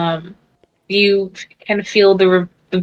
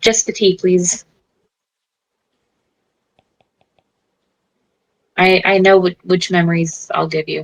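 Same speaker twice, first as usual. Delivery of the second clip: spoken through clenched teeth. Narrating a scene and voicing her answer to him, through gritted teeth. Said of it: "she grits her teeth and goes".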